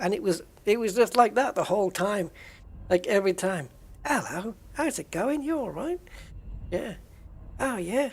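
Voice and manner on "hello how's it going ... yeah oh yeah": overdone, exaggerated chatty small-talk voice, sing-song. Speaker recalling a man who greeted like this every time, exaggerated impression of a man. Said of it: "I'm exaggerating it a little".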